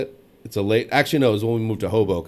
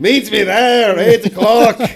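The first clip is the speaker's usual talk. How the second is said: put-on Scottish accent, very high and loud; 11 semitones higher, 9 dB louder than usual. Acting out a woman's invitation while teased about the accent, put-on Scottish accent. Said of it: "You doing the accent isn't helping this".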